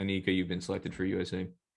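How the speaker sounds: ordinary talk, nothing marked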